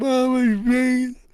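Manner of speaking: very high, sobbing, crying voice. Retelling coming home hurt to Mom: imitating own past crying. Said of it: "I'm crying".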